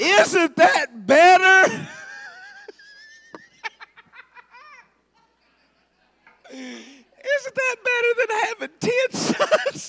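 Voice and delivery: laughing through it, very high pitched. Reading a husband's words about having no children, laughing while talking. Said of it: "I can't even say it with a straight face".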